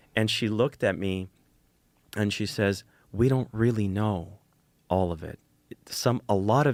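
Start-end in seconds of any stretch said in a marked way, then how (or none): 3.2-6.8 put-on whispering voice. Retelling what someone at the dinner table said: imitating someone whispering. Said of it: "she said it whispering".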